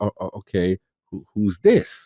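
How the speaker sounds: voice dropped an octave, low and hushed. Retelling a reaction to a new protagonist: retelling an octave lower. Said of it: "I came down an octave".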